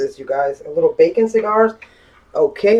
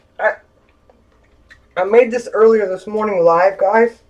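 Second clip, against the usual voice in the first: talking while eating, mouth full, higher; 5 semitones higher than usual. Telling the viewers after a bite, talking with mouth full. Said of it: "I'm sorry, my mouth is full".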